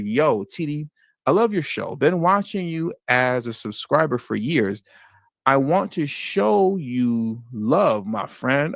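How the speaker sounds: slow, cautious, careful word-by-word reading. Reading a viewer's comment aloud carefully: reading slowly. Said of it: "Y'all see how I had to read that a little bit slow".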